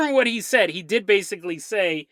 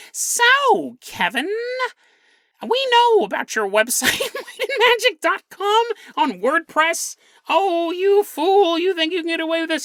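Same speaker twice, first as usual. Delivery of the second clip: squeaky, very high, slow put-on voice; 9 semitones higher than usual. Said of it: "He speaks in a very high pitched voice".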